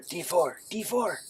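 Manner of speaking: slow, drawn-out, secretive stage whisper. Voicing a Kenku that whispers in a player's ear: Kenku whispering in your ear. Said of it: "You hear the Kenku whisper in your ear".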